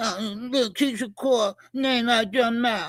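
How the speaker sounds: mock mumbling, as if mouth full. Retelling a confrontation and mocking the other man: imitating someone talking with a full mouth. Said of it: "It sound like he got a bunch of shit in his mouth".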